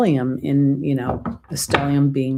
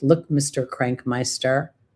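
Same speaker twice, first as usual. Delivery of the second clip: normal talking voice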